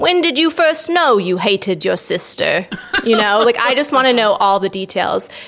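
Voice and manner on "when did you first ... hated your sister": full-on probing TV interviewer voice. Imitating a TV interviewer asking a probing question: Diane Sawyer impression. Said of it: "full-on Diane Sawyer when I get to know somebody and being like".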